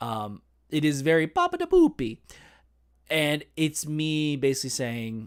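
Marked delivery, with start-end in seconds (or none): 1.3-2.2 insultingly exaggerated, over-the-top put-on Italian accent. Speaker acting out a stage bit in a Luigi voice, insulting Italian accent. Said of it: "a really insulting Italian accent".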